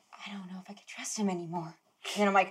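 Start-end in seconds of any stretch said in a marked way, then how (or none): 0.2-1.7 real, very quiet whisper to oneself. A player demonstrates the genuine version of a whispered game line, whispering to oneself. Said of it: "So I say".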